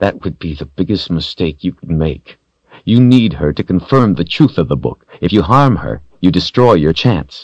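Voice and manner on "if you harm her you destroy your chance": plain reading voice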